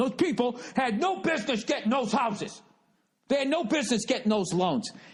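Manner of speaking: put-on high-pitched, worked-up, frantic rant in crazy old voice. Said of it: "he was flipping out going".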